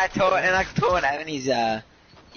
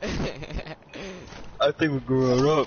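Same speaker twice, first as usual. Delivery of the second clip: very slow, drawn-out teasing, every word stretched. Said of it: "Why'd you say it like that?".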